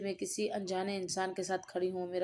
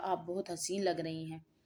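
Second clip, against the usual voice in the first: ordinary delivery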